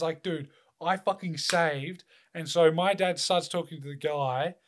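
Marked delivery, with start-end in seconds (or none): 0.2-2.0 mock angry, furious, fuming tone. Retelling his reaction after his dad told him to fill the gap, retelling furious words. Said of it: "I was fucking fuming".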